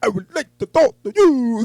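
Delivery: put-on old-film vampire Romanian accent. Show a friend the cheesy old spy movie accent, in a cheesy Bela Lugosi Romanian accent. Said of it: "trying to do that Romanian accent".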